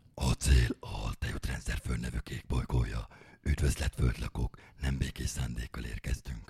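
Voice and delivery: put-on sci-fi alien invader voice. Demonstrating a voice from a classic performance piece, in a sci-fi alien voice. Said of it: "ilyen hangon beszélek".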